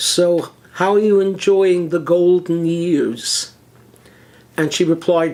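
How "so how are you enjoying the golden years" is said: ironic, tongue-in-cheek, sarcastic tone. Retelling a question put to an ill congregation member: retelling own sarcastic remark. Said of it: "I said to her sarcastically".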